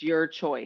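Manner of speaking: heavy stress placed on the words "your choice". Describing what women are taught, quoting the message with stress on 'your choice'. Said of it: "I'm emphasizing the word your choice".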